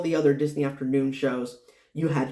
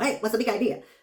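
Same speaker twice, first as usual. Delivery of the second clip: sped-up, high, squeaky chipmunk voice, rattled off; 7 semitones higher than usual. Explaining how the cartoon lines were sped up, then doing the sped-up Dale voice. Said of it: "it would sound like Dale".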